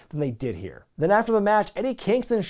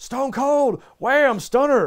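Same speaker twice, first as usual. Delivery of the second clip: high, loud yelled delivery. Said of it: "just yelled out their nickname before".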